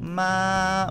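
ma held high and flat, first tone. Explaining the first tone in a lesson, saying ma with a high level tone. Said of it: "¿Cuál es el primer tono? El robot, el paro cardíaco".

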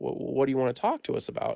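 ordinary delivery

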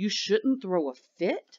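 plain

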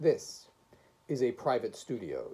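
ordinary delivery

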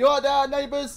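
loud, high-pitched screaming. Streamer with windows open calls out to the neighbours, screaming. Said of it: "I'm sorry, I'm screaming".

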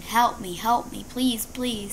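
put-on screaming and crying. Recounting a fall that hurt the speaker's foot: retelling screaming and crying. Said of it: "I started screaming and crying and screaming".

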